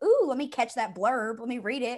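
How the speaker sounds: bright, keen, eager excited voice. Retelling own reaction to a new book cover, imitating own excited self. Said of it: "I was excited".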